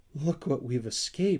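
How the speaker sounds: quavering, shaky, trembling exclamation. Narrator reading a character's line after the raft runs aground, in a shaky voice. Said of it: "in a shaky voice".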